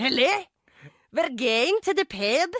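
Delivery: put-on Scottish accent. Friends joking in Swedish about Scottish accents, one tries it: fake Scottish accent. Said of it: "att hämnas skotska".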